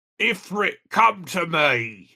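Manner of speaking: gruff, loud, slow, deliberate growl. Quoting a line the voice actor is hired to say: gruff Ben Starr line reading. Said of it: "say a line with that gruff".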